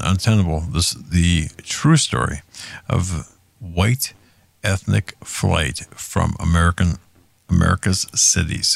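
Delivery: slow, deliberate, unhurried reading aloud. Reading a book title aloud for viewers to write down, slowly. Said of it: "I read that slow".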